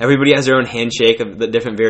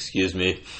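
abruptly deepened, very soft, hushed voice; 4 semitones lower, 10 dB quieter than usual. Retelling a customer offended at being misgendered: imitating a man's suddenly dropped voice. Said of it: "all of a sudden his voice drops, like, eight octaves".

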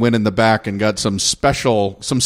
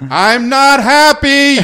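very high, shrill yell from full lungs; 7 dB louder than usual. Recounting facing a long queue, retelling a top-of-lungs yell. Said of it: "I yelled at the top of my lungs".

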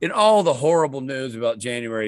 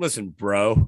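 mock casual bro voice, lower pitch; 5 semitones lower than usual. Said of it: "The doctor's like".

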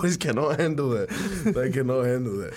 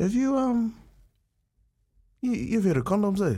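put-on sheepish, awkward voice, higher pitched; 8 semitones higher than usual. Retelling how a dad started a talk about a girlfriend: imitating sheepish dad. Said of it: "he gets really, like, sheepish".

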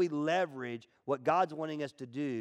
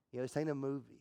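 ordinary talk

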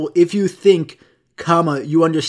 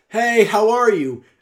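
projected, drawn-out, pitched-up call carrying from far back; 7 semitones higher than usual. Explaining what theater classes teach, the speaker demos a projected voice, not yelling. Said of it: "You project your voice to be louder".

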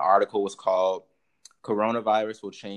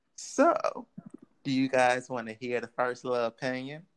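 country bumpkin accent; 4 semitones higher than usual. Speaking to the group about the opinions, in a country bumpkin accent. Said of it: "stop at the country bumpkin accent".

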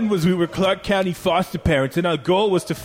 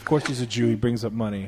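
ordinary talk

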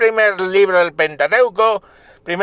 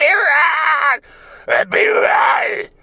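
devilish shouting voice; 8 semitones higher than usual. Speaker acting out mothers entering the hospital, mock demonic shouting. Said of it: "entran desde la puerta del hospital gritando ¡Epidural!".

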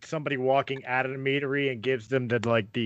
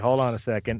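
plain

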